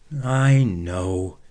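sighing. Reading a children's story, one boy answers another after an argument, sighed. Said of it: "sighed Jake".

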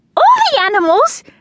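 very high, loud, squeaky voice. A girl hearing about a storybook from another girl, squeaking. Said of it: "I squeaked".

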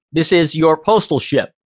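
plain

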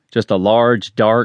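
ordinary delivery

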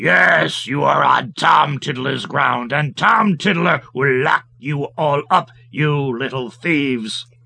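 big, rough, deep, hulking giant voice. Narrator reads the giant catching the goblins on his ground; big rough voice. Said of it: "a big, rough voice say".

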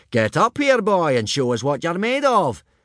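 loud, booming, high-pitched surprised shout. Gobber calls Hiccup up, booming in surprise. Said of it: "boomed Gobber in surprise".

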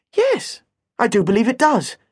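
overly courteous. Challenged over a no-ball-games sign, the narrator answers the complainer ultra politely. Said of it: "I said ultra politely".

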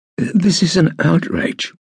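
hoarse, very high voice, words drawn out. Cicero, having swallowed hard at the sight, finally speaks hoarsely. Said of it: "he said hoarsely".

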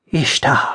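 sharp gasp on the word. A man in ermine, reeling from extreme tension, gasped exclamation. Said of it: "he gasped".

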